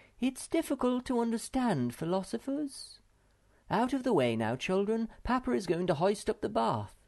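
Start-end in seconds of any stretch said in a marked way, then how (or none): 0.2-3.0 sighing, higher-pitched delivery. The mother responds to news about the philosopher, sighing. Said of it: "sighed Moomin Mama".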